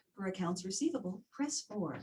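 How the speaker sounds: polished, professional public radio announcer voice. Showing a phone menu line in a professional recording voice: NPR voice. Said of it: "We call this my N P R voice".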